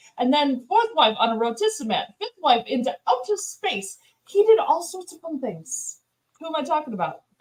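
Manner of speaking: attempted put-on British English accent. Describing a king for others to guess, in a british accent. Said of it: "That's my British".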